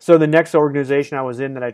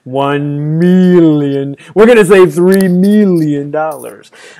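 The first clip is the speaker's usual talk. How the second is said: very loud, booming, campy villain voice; 9 dB louder than usual. Teasing the other speaker about how they pitched a three-million number, Dr. Evil voice. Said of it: "did you do it in the Doctor Evil voice?".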